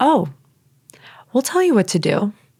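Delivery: mild, gentle voice heard within. Retelling a voice heard in the head: imitating a very soft voice. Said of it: "this voice very, very softly in my head say".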